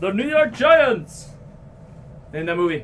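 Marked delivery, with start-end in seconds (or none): 0.0-1.3 high, put-on cartoon king character voice. After pulling a New York Giants card, doing a King Julien impression. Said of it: "a pretty good impersonation".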